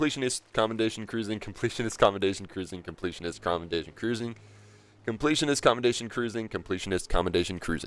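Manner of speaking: fast, rapid-fire, rattled-off repetition. Repeating a tongue-twister title after being asked to say it ten times fast: said fast, repeated. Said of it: "Say it ten times fast".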